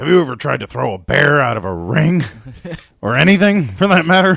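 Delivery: put-on Southern accent. Retelling a wrestling promo cut in a put-on Southern accent. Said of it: "like, a little, like, Southern accent".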